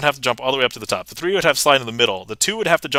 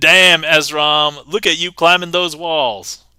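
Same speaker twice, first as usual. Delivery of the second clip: full-on sassy, loud, slow drawl; 4 semitones higher, 6 dB louder than usual. Showing a card trick and speaking to a card: put-on sassy tone. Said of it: "I just assumed that would be sassy".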